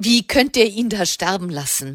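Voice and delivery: plain reading voice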